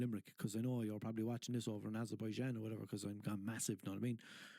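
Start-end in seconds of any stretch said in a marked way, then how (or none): none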